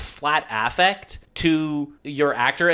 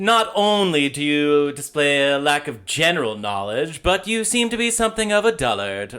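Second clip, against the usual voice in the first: put-on exaggerated, over-the-top affected delivery. Showing how they deliver a line in a very over-the-top way: mimicking over-the-top affected delivery. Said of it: "over the top the way you just did it. Like, that was very, like, affected".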